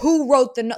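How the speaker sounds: very loud, furious chest voice, angry outburst. Imitating Sammy confronting the house about a note: imitating Sammy's deep angry voice. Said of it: "she got deep".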